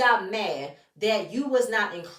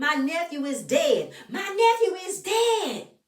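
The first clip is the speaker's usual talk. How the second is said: spiraling, frantic, distraught, drawn-out outburst; 8 semitones higher than usual. Retelling a distraught woman's outburst: imitating frantic distress. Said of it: "she's all spiraling out".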